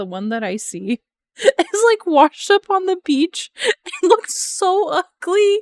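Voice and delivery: very high, loud talking through laughter. Describing a washed-up octopus photo to viewers: laughing while talking. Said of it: "I'm laughing because".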